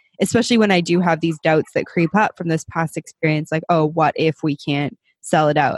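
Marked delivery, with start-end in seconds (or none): none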